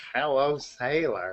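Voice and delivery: playful, joking put-on voice. Joking about sailors with the others: put-on voice greeting a sailor. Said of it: "that voice sounded familiar".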